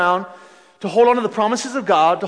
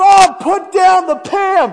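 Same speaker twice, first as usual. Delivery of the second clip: mock slow, drawn-out, pitched-up yell; 9 semitones higher, 5 dB louder than usual. Recounting shouting to a roommate from behind a closed door: retelling a shout. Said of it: "I'm shouting".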